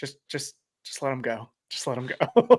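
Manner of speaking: soft, hushed, barely voiced whisper. Recounting wandering around Athens, quoting a whispered aside: whispering like Paige. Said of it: "Paige was like whispering to Izzy".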